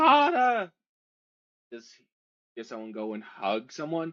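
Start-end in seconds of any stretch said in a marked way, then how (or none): 0.0-0.7 put-on piercing, very high, very loud little girl's scream. Voicing a little girl in the game: little girl screaming. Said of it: "a little girl s-, screams out".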